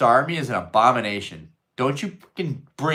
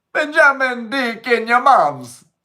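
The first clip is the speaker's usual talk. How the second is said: very high, loud, put-on Jamaican accent; 13 semitones higher, 7 dB louder than usual. On a stream, reading a line aloud in a Jamaican accent. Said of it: "Read it in a Jamaican accent".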